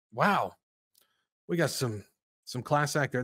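sarcastic, insincere, not-meant tone. Commenting on a list of school teachers: sarcastic. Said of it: "That's sarcasm".

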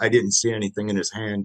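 usual speaking voice

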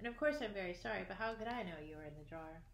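ordinary delivery

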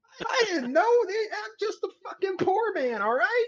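very high, slow, blubbering terrified pleading. A banjo-player character answers another character who scolds him: terrified character. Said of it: "so the poor banjo player seems to have pissed himself already in the morning. ... I'm just a regular guy from the city. ... fuck this goddamn accent. Okay, look, I'm just a regular guy from the city".

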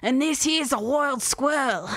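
poorly done, fake Australian accent. Pitching a neighborhood video idea to viewers, in a terrible Steve Irwin accent. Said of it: "a terrible accent that nobody can".

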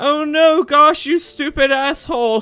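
put-on high, loud old lady voice.

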